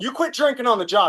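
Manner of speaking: high, heated, angry, jabbing delivery.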